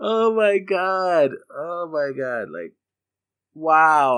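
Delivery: talking through helpless laughter, high pitched, slow. Reacting to a game listing, laughing while talking. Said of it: "I'm, like, laughing so hard".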